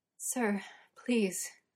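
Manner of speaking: gasping words, gasped out. Narrator voicing Merlin as Uther touches him, gasped out. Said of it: "Merlin gasps out".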